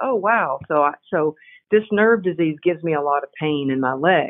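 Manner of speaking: ordinary talk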